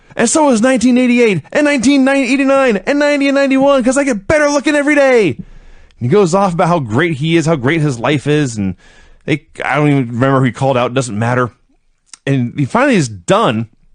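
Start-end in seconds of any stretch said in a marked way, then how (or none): 0.2-5.3 roaring, hollered wrestler promo voice, pitched higher. Retelling a wrestler's promo: imitating Jimmy Garvin roaring and hollering. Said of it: "He roars and hollers and says".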